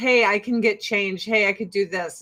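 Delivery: ordinary delivery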